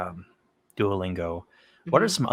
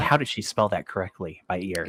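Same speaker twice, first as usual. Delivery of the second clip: usual speaking voice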